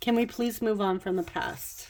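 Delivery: ordinary talk, nothing marked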